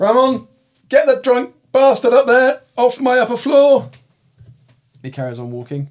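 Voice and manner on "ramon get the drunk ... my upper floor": shrill, very loud, high-pitched full-volume shout. Narrating a scene, voicing a man on the stairs calling to ramon; shouting. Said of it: "and he shouts".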